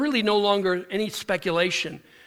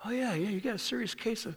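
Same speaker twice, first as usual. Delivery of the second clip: gentle, low-key, soft-spoken, hushed voice; 11 dB quieter than usual. Retelling a dermatologist's exam of her, imitating a soft-spoken doctor. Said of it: "He's real soft-spoken".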